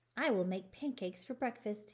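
plain

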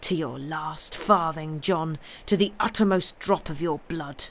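plain

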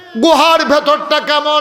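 impassioned preaching climax, high, loud, fervent cry.

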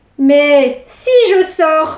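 severe, stern, very slow and deliberate. Madame Cornebidouille speaks again to Pierre, sternly. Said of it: "reprit-elle sévèrement".

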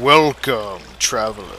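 low, hushed, sultry, seductive voice. Playing a talking cave that greets a traveler, in a sultry voice. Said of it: "Do not be afraid by my sultry voice".

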